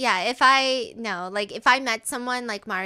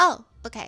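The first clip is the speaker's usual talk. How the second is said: mock cold delivery; 4 dB louder than usual. Retelling a reality show date, imitating a cold reply. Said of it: "really cold about this".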